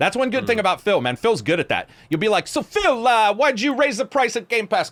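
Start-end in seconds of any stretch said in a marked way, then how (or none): 2.5-4.9 put-on pitched-up wiseguy gangster accent, mobster voice. Imagining asking Phil a question about Game Pass: mobster voice. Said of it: "I don't know why I'm mobster suddenly".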